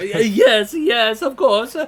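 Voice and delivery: high, stammering, harried voice. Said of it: "the physicality of Manuel".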